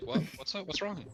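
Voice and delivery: baffled, concerned, confused, high voice. Acting out a date who offers peanut butter: imitating a confused woman. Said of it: "she's confused".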